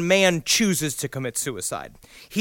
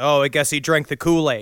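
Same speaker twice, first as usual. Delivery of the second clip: ordinary talk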